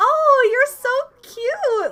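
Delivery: fake American girl accent, very high, loud, shrill, drawn out. Praising an actress's accent, demonstrating it: fake-nice american girl accent. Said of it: "fake American Girl accent of like being overly nice".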